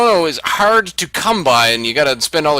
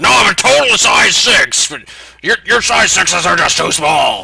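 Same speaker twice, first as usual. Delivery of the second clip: raspy, creaky, gravel-edged put-on devil voice; 3 semitones higher than usual. Imagining Satan shopping for clothes: imitating Satan. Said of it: "You can just imagine Satan going in there".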